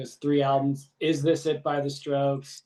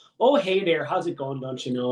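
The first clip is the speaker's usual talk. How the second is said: Minnesota-style Midwestern accent. Imitating how some people talk: Minnesotan Midwest accent. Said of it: "That Minnesotan sort of Midwest".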